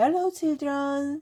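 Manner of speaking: sweet, high voice. Reading a story aloud, a woman greets the children in a sweet voice. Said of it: "someone said in a sweet voice".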